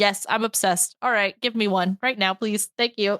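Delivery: ordinary talk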